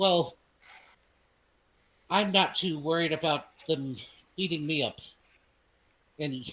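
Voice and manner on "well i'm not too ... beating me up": openly mocking delivery. Voicing a buyer who answers the party: mocking tone. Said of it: "in a mocking way".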